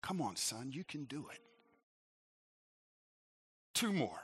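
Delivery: hushed, encouraging half-whisper, close up. Retelling how a man half-whispered in his ear, urging him on: half-whispering. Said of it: "whispering in my ear".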